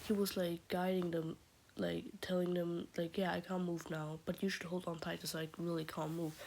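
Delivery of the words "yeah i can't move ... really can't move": ordinary delivery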